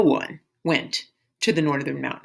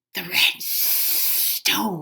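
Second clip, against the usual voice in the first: whispered, hushed, hissing serpent voice; 5 dB quieter than usual. Narrator reads a snake spotting Kuang's prize, in a hissing snake voice. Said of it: "it hissed".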